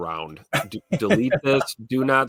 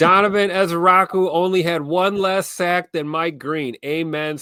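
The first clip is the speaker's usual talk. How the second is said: drawn-out, high-pitched scream; 7 semitones higher, 4 dB louder than usual. Reading a viewer's all-caps chat message aloud when asked: screaming a chat message. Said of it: "You wanna scream it for me".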